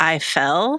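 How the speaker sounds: put-on whisper. Retelling a scene where Cordelia, hurt, says her line: imitating Cordelia whispering.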